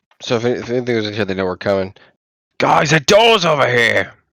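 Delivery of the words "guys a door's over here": loud, drawn-out, high-pitched shouted call. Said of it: "since you're close and shouting things".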